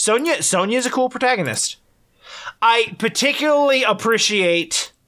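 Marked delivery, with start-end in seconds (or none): 3.8-4.9 "appreciate" stressed with heavy sarcastic mockery. Talking about a game's protagonist, with a sarcastic 'appreciate'. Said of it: "hopefully you can detect the sarcasm in my voice when I say appreciate".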